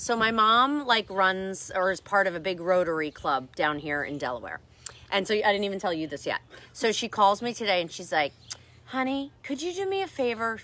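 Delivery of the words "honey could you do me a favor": quiet, soft-spoken voice. Speaker retells their mom calling to ask a favor: imitating mom's voice. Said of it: "she loves when I talk like that's how she talks".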